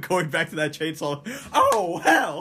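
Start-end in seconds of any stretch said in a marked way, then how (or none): 1.5-2.4 very high, loud, blurted outburst. Imagining a comedian reacting to a scene: imitating Eddie Murphy. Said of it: "Eddie Murphy, like".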